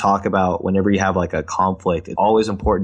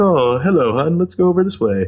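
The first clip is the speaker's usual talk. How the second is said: playful, high, put-on posh upscale accent; 9 semitones higher than usual. Suggesting a playful thing to do while walking arm in arm, in an upscale accent. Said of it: "talk in an upscale accent".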